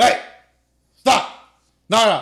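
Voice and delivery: very loud, slow, drawn-out barking shout. Showing how they yell at the kids: imitating a loud bark. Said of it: "like a loud bark".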